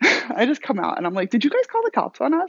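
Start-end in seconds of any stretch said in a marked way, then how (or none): 1.3-2.5 light, playful, very high-pitched fun inflection. Retelling asking the others whether they called the cops, with a retold playful inflection. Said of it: "a little bit of a fun inflection in my voice".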